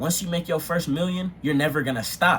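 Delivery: ordinary delivery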